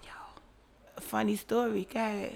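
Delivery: hushed whispering. Starting a funny story for the guys, whispering. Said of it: "Why are you whispering?".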